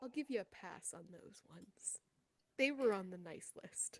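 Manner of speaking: soft, hushed whispered aside. Voicing a warlock's patron speaking into her ear: whispering as the patron. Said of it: "Your patron whispers in your ear".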